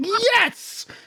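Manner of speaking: put-on very high, gleeful, excited triumphant cheer. Retelling how two players reacted to picking the same accent: imitating a cheer.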